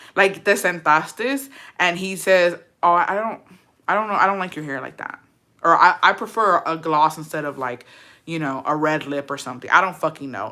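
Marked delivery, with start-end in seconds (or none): none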